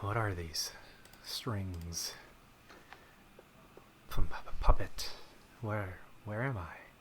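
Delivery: slow, breathy, halting, stumbling voice. Introduced as a movie robot, speaking as Ultron. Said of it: "with me today is Ultron himself".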